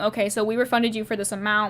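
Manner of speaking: ordinary talk, nothing marked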